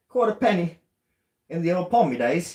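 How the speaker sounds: very loud, high, bad Cockney accent. Wanting to narrate everything the other person says, in a horrible Cockney accent. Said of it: "with like a horrible cag- Cagney Cagney accent".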